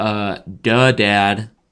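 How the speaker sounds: mock sarcastic three-year-old child voice. Imitating a three-year-old daughter's reply: imitating a sarcastic three-year-old. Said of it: "giving you witty sarcasm".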